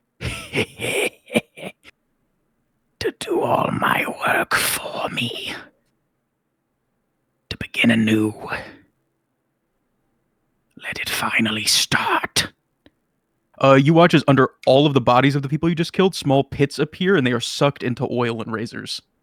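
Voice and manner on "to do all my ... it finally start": very slow, dry, raspy, grating chalkboard whisper. A storyteller voices something foul speaking to the group: dry, raspy, grating voice. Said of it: "dry, raspy voice, almost nails on, on a chalkboard".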